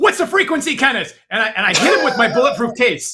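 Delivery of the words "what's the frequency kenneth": high, charging battle-cry shout. Charging at the guard in the game and yelling. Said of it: "I run directly at the guard and I yell".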